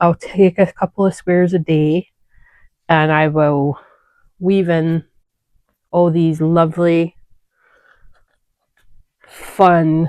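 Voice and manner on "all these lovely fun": dry, heavily sarcastic delivery. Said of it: "I'm being sarcastic".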